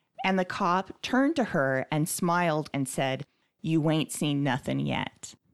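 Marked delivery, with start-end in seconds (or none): none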